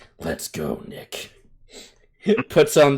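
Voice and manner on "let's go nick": very deep put-on voice. Acting out someone's line in a joking bit: super deep voice. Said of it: "It's just like a super deep voice".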